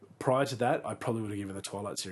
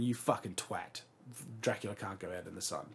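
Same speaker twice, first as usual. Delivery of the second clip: ordinary talk, nothing marked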